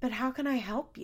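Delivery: very calm, composed, unruffled tone. Retelling how Bristol arrives with cameras, imitating Bristol's calm tone. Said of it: "is so calmly, like".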